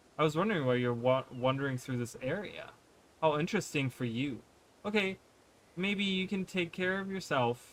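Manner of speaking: normal talking voice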